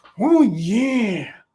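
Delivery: strained, drawn-out "yeah". Asked by friends to do it again, speaker gives a strained Macho Man impression. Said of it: "You sound like you're constipated".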